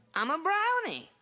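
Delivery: put-on southern US accent. A brownie at the North Pole answers an interviewer's questions, in a southern accent. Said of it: "What are you doing at the North Pole with a southern accent?".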